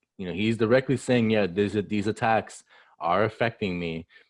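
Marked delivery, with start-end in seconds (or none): none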